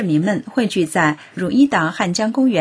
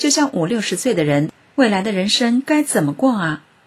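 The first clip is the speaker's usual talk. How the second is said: normal talking voice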